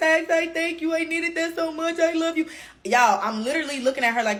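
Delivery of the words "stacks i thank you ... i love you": weepy, tearful, high, overflowing voice. Retelling a girl hugging and thanking the speaker: imitating someone crying. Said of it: "hugging me, crying like".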